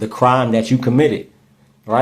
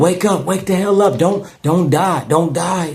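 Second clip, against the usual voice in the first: play-acted child's light, urgent, pitched-up yell; 6 semitones higher than usual. Retelling what a kid in the background of a call said, imitating a kid yelling. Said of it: "the way he was yelling".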